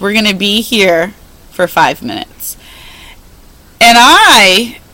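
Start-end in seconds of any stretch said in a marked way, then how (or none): 0.0-2.6 very stern, strict, no-nonsense tone. Retelling what he told the whole room after the forward fold, imitating a stern voice. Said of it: "in his very stern voice".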